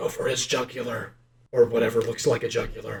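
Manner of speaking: secretive hushed half-whisper, close to the ear. Half-whispering an order into his imp's ear before kicking it: half-whispering. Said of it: "I whisper into his ear".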